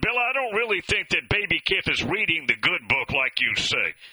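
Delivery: ordinary delivery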